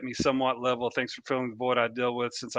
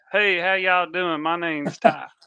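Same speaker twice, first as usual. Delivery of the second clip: put-on loud, high-pitched Kentucky accent; 6 semitones higher, 5 dB louder than usual. Recalling introducing himself as a new high-schooler after moving, his old Kentucky accent. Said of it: "I can't even do the accent that I had".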